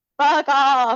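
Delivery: loud, bleating goat voice. Voicing the goat man telling someone off: goat-sound voice. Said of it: "you gotta do it with the goat, the goat sound".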